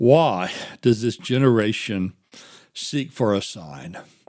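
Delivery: mock worn-out, deeply weary, sighing tone. Retelling his reply to the Pharisees, the speaker acts out an exhausted tone. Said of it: "picture him with an exhausted tone of voice saying".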